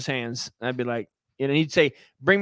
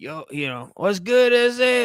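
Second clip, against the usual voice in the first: put-on, fake East Los Angeles street voice, higher; 6 semitones higher than usual. Retelling how the drug dealer Mike talked: imitating Mike the drug dealer. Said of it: "he talked like".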